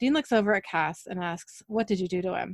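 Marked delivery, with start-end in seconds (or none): none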